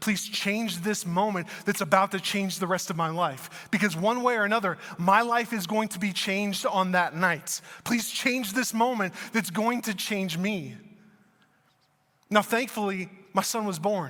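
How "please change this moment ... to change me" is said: ordinary talk, nothing marked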